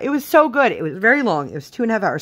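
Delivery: choked-up, moved, emotion breaking through, slightly high voice. Talking about a movie that moved them to tears: getting emotional. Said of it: "I'm getting emotional about it".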